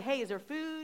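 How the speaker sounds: playful teasing. Retelling what they asked on arriving for golf: retelling a tease. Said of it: "I'm just teasing".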